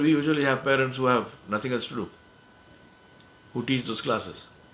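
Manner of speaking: ordinary talk, nothing marked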